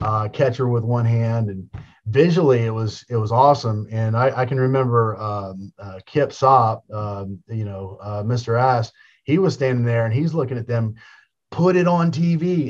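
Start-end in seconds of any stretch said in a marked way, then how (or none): 11.5-12.7 put-on yelling, higher pitch. Retelling how a wrestler yelled at the office: imitating someone yelling. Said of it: "And he's yelling at 'em".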